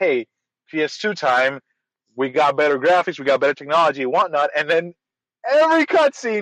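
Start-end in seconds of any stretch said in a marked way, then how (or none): none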